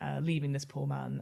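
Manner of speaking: ordinary talk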